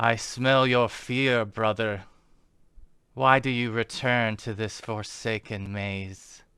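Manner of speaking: echoing calling out. Narrating a scene, voicing an unseen figure in a maze: voice calling out, echoing. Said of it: "a voice that calls out and echoes".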